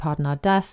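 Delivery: ordinary delivery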